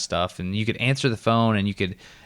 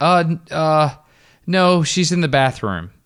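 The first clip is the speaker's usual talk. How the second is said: put-on flustered voice, higher, louder; 7 semitones higher, 5 dB louder than usual. Retelling not knowing what to say on the phone: imitating his flustered younger self. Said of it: "And I was like".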